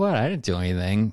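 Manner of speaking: plain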